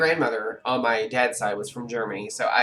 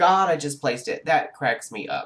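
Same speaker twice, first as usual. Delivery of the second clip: normal talking voice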